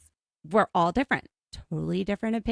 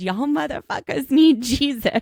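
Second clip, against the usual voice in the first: all-out, shrill, loud screamed outburst; 7 semitones higher, 6 dB louder than usual. Retelling a friend yelling out a car window: imitating a friend screaming. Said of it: "he rolls down the window and screams".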